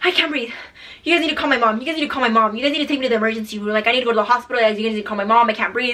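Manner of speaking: put-on panicked, pleading tone. Retelling a friend begging to be taken to hospital: imitating someone panicking. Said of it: "He was freaking the fuck out".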